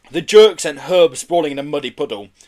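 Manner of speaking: ordinary delivery, nothing marked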